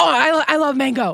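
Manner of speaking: high-pitched, a bit unhinged voice. Retelling a scene where Emmy interrupts: imitating Emmy's unhinged interruption. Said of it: "she interrupts and is like".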